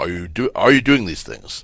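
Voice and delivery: ordinary talk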